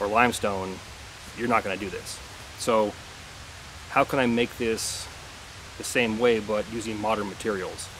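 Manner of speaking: normal talking voice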